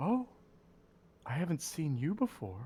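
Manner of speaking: sweet, sugary, honeyed monster voice. Game master voices a creature spotting a hovering eyeball in the room, sweet creature voice. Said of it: "in almost like a like a sweet voice goes".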